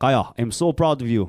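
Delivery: proud fatherly dad voice that misses the mark. Saying the dad's words of praise to Kaiya in a failed Johnny impersonation. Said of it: "I got to learn my Johnny impersonation".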